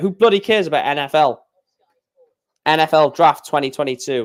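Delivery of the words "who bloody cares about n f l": usual speaking voice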